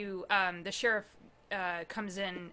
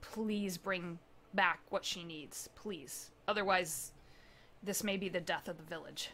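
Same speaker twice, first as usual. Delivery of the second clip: grave, solemn, very serious and earnest voice; 4 dB quieter than usual. Voicing a villager begging the players to bring back what is needed: very serious plea. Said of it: "he looks at you very seriously and he says".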